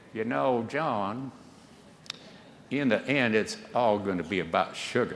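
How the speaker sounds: put-on southern Texas twang drifting toward Carolina accent. Recalling what an SAB member once said, in Doctor Hooper's Texas accent. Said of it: "a bright guy with a Texas accent ... I got a little too much Carolina in that accent".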